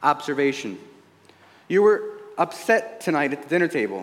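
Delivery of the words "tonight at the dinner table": ordinary talk, nothing marked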